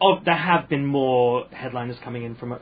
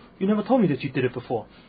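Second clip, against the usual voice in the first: whispered put-on impression. Retelling someone whispering in the speaker's ear after an open mic: Jamie impression, whispered. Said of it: "it's my best Jamie impression".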